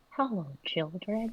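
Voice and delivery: hushed, soft, tender, gentle half-whisper. A character goes up to tiny snails in their eggs and greets them; half-whispering gently. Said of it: "Herman goes up to them and whispers".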